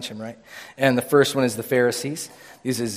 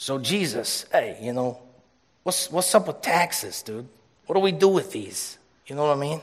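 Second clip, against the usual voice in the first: rough, imperfect put-on Chicago accent; 3 semitones higher than usual. Speaker acting out the Pharisees questioning Jesus, in a put-on Chicago accent. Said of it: "That's my Chicago, was that Chicago? Chicago accent?".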